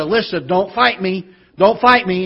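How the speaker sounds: put-on frustrated tone. Retelling what a wife told a daughter: imitating a frustrated voice. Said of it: "frustration in my wife's voice as she said".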